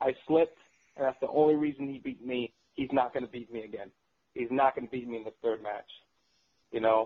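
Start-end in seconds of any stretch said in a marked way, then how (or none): none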